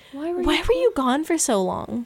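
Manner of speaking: mock puzzled, bewildered, high and swooping. Retelling what Toby asked when the speaker turned around, imitating Toby's confused voice. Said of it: "he just sounded kind of confused".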